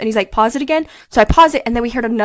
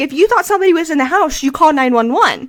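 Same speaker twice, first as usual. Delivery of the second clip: loud, scolding yell; 4 semitones higher, 3 dB louder than usual. Acting out how he yelled at the speaker: retelling a yell. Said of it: "he's yelling at me because he's like".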